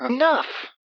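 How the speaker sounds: very high, firm voice. Reading a story aloud, voicing Coretta cutting off the talk: speaking firmly. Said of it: "Coretta spoke firmly".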